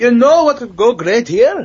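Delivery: put-on Scottish accent. Trying again after a failed attempt to imitate a guy lounging around meetings, bad Scottish accent. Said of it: "I can't do a Scottish accent to save my life".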